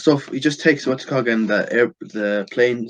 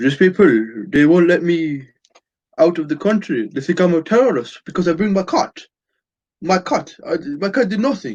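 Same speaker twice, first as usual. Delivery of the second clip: pitched-up put-on French woman's accent; 6 semitones higher, 3 dB louder than usual. A speaker retelling what a French woman with a cat said: French accent. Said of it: "I try my best French accent".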